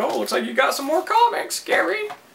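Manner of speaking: very high mail carrier voice. Retelling the post lady's comment on his comics mail: imitating the post lady. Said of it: "that's how she sounds".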